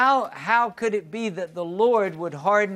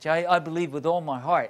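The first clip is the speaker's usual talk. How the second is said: usual speaking voice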